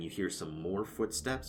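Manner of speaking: usual speaking voice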